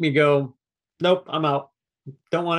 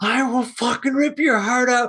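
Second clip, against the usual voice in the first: put-on screaming voice, pitched higher; 8 semitones higher than usual. Retelling a movie scene, a producer on the phone: imitating Tom Cruise screaming. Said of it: "Tom Cruise screaming at the guy".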